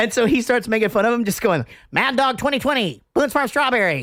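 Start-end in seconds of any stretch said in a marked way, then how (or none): 1.9-4.0 mocking stock caricature of a square guy.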